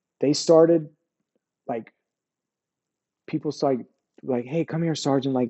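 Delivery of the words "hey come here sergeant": mock soothing tone, quieter. Retelling people trying to defuse him: imitating someone calming him down. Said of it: "trying to diffuse me".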